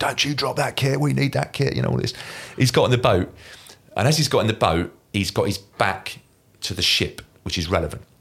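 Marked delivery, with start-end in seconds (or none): 0.0-1.7 put-on urgent, high-pitched hollered shout. Retelling a transfer at sea, acting out shouting at a man on a net. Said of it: "I'm shouting at him".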